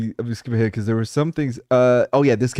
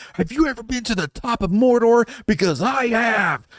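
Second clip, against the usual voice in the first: play-acted, very high, shrieking screamed delivery; 12 semitones higher than usual. Retelling a guy in a game lobby screaming over his mic, imitating someone screaming. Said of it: "he screams at us over his mic".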